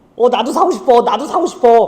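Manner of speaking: high, eager, keen voice.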